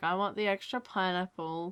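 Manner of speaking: really slow, boring, trailing off quietly.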